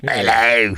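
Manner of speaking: put-on British accent. Trying out a British accent to join the study: put-on British accent. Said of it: "that's the only one I can do".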